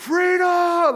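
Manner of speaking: rousing battle cry, very high and loud. Talking about the word freedom, the speaker shows how he hears it: Braveheart-style shout. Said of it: "they say it in like the Braveheart voice".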